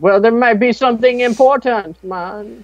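very high-pitched put-on Jamaican accent voice. Replying to someone who is waiting for him: jamaican accent. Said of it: "Using my Jamaican accent to explain importance".

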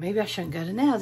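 normal talking voice

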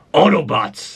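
deep, low voice calling out. Asked to voice a character, trying a low voice: Optimus Prime voice. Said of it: "That's too low".

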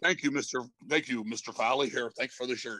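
low, serious tone. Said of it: "the [name] serious tone".

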